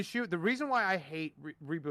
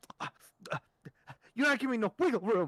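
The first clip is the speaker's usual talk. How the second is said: mocking a stutter, higher pitch; 5 semitones higher than usual. Retelling how an opponent kept stuttering, imitating someone stuttering. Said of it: "he kept stuttering".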